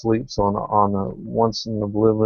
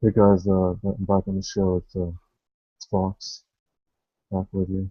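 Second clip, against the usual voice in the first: mock-quiet voice, much quieter; 2 semitones lower, 3 dB quieter than usual. Teasing the other speaker for sounding too quiet, mimic them: imitating someone's quiet voice. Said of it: "You're pretty quiet. You're like".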